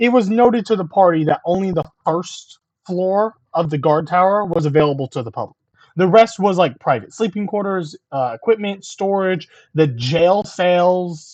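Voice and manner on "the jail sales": country accent creeping and slipping through. Listing the guard tower's private areas to the group, country accent slipping out. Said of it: "country accent comes out".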